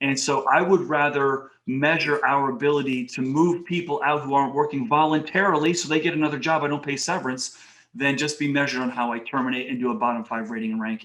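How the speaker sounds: ordinary talk, nothing marked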